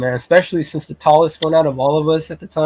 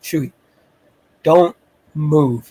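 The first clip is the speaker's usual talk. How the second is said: acted-out whisper, slower. Retelling slowly approaching the tent and calling to chewy, retelling a whisper. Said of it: "I'm whispering".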